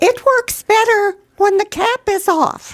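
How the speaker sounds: very high pitch, belted out at full loudness. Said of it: "Liberace says in his high-pitched voice".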